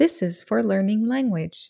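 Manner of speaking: ordinary talk, nothing marked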